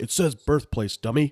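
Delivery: put-on booming, resounding drill sergeant voice. Retelling how a drill sergeant corrected his form, the speaker quotes him: booming drill sergeant voice. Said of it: "hear this booming voice say".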